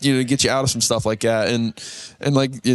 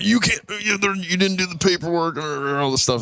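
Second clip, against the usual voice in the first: put-on, stumbling, raving tirade, pitched up; 7 semitones higher than usual. Retelling how the town mayor came out over an unpermitted patio, imitating an angry rant. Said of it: "he came out ranting and raving".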